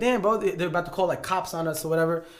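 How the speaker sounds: usual speaking voice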